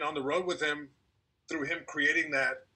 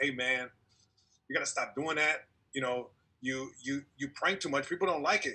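mock-stern, imitated stern delivery. Retelling a talk someone gave him on a plane ride, retelling a stern talk. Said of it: "he gives me like a real stern talk".

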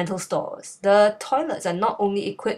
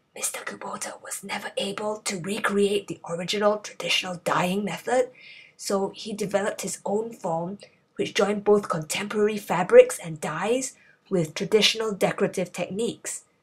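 soft, hushed whisper. Filming in a museum, unsure if videos are allowed, whispering. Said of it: "why I'm talking in a whisper".

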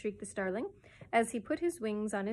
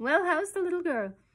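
impudent, saucy, cheeky tone with raised pitch; 8 semitones higher, 6 dB louder than usual. Landing on a windowsill, he questions a woman, cheeky. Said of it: "He inquired cheekily".

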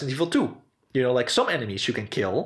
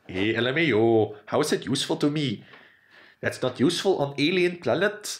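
put-on alien voice with odd accent. Speaker acts out an alien's reply, in an alien voice. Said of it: "that's the alien voice".

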